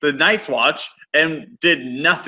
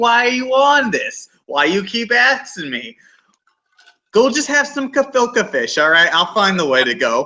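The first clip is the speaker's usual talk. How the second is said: put-on elderly man's voice, pitched up high; 5 semitones higher than usual.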